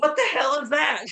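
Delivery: high, slow, mild mock yell. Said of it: "Milton just yells".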